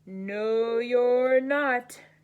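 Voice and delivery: loud, growling troll voice. Reading the Billy Goat Gruff story, the narrator voices the Troll answering the goat: growling troll voice. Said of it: "growled the Troll".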